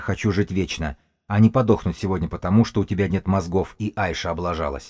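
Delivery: ordinary delivery, nothing marked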